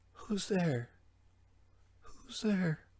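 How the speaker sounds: very high, hushed, slow whisper. Retelling a movie character hearing noises behind him: imitating a whisper. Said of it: "turn around and whisper".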